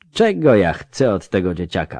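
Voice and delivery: ordinary delivery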